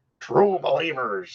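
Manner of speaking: gravelly, growling voice with lots of gravel. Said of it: "Stan Lee had more gravel and growl".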